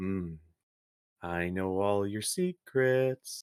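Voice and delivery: slow, floating-eye creature voice. Voicing a massive floating green eye speaking in a player's head: voice of a floating green eye. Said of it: "the same voice you've been hearing coming from the eye".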